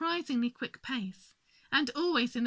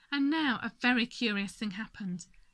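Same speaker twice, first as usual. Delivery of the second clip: ordinary delivery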